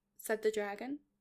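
ordinary delivery

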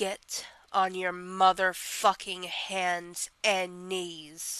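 slow, dominant, commanding dom voice. Speaker showing how much they love using the Dom voice: Dom voice. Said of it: "I really l love using the Dom voice".

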